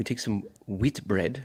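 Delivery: put-on English accent, British cooking-show style. Performing a cooking line on request: british accent. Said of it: "What do you want me to say with my British accent?".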